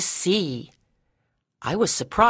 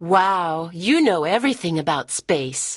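ordinary delivery, nothing marked

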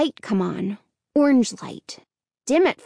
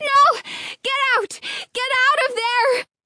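very high, piercing, shrill scream; 12 semitones higher than usual. Hannah sees a fire and screams to the people inside to get out; screaming. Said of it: "she screamed".

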